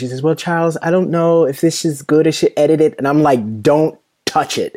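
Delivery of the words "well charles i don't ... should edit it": put-on Jamaican accent, higher pitch. Quoting a woman who brought him her poems, in her Jamaican accent. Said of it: "she has this great Jamaican accent too".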